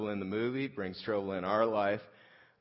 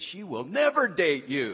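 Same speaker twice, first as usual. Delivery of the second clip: mock ballistic, furious yelling, high pitched; 7 semitones higher, 4 dB louder than usual. Recalling yelling at an umpire after being tagged out, retelling an angry yell. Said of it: "I'm yelling at the umpire".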